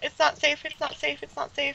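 crying while talking. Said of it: "now you're crying".

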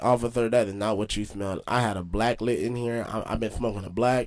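plain

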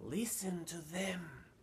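hushed, soft, high-pitched half-whisper. An old man shows someone a bag of glowing crystals: half-whispering. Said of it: "the old man whispered".

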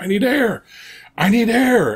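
play-acted high, drawn-out, air-starved gasping, pleading. Retelling a congestive heart failure patient on a non-rebreather; imitating a gasping patient. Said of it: "patient gasping for air, quoted".

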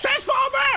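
loud high-pitched yelling.

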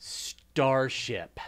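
heavy stress on Star of Starship. Asked to say it with air quotes: eye-rolling stress on star in starship. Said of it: "say it with air quotes and really emphasize the star".

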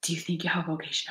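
soft, hushed whisper under the breath. Retelling a sister's question at the airport: imitating Sister Claire whispering.

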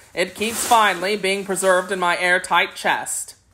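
usual speaking voice

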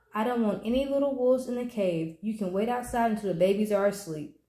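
ordinary talk

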